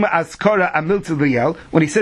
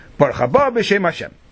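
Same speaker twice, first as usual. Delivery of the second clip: unbroken, all in one breath, no pause before b'shem; 2 semitones higher than usual. Explaining how to say baruch haba b'shem hashem, one breath, no pause before b'shem. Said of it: "It should all go in one neshima achas".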